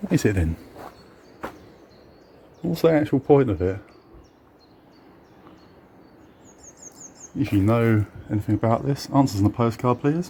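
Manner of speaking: hushed, whispering voice. Exploring an old barn on a countryside walk, whispering. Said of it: "I'm still whispering".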